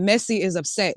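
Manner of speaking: ordinary talk, nothing marked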